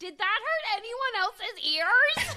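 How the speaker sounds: very high, loud near-scream. In a silent movie theater, a man with sensitive hearing addresses their row: retelling a scream. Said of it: "just scream".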